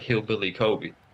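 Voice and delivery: imitated whisper. Retelling how a ga said the nickname during practice: imitating a whisper. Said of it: "he was kinda whispering to me".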